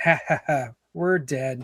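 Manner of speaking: evil, sinister laughing delivery into words. Speaker retelling a woman's voice heard in the messages, imitating an evil laugh. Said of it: "really evil laughing".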